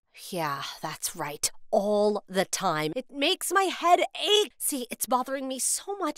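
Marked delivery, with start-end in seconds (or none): 0.3-4.6 slow, worn-out, worried drawl. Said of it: "it makes me talk funny".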